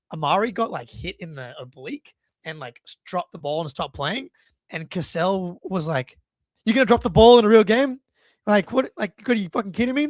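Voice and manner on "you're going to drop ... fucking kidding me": put-on very loud, high-pitched, taunting voice. Retelling a player mocking others during warm-ups: imitating trash talk. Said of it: "immediately talking shit to all three guys".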